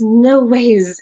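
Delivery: put-on excited voice. Retelling what a stranger in a lift said: imitating someone excited. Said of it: "she got so excited".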